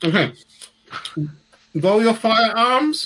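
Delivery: talking through a full mouth. After putting a pretzel in the mouth to be understood, talking with mouth full of pretzel. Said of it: "If I put this pretzel in my mouth".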